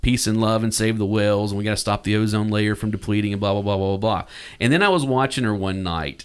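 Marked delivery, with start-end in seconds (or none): none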